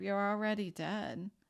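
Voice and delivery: hushed half-whisper under the breath. Retelling looking in the mirror and speaking to oneself: imitating a half-whisper. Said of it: "I whispered to myself".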